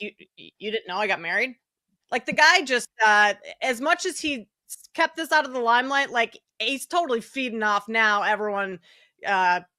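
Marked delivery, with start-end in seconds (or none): 0.0-1.6 acted-out condescending retort, talking down. Retelling an athlete's reply to a reporter: imitating someone being condescending. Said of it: "kinda condescending".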